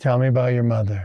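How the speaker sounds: calm, measured interviewer voice, like a therapist. Doing his best Sean Ryan, quiet like a psychology visit: quiet Sean Ryan impression. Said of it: "Here's my best Sean Ryan".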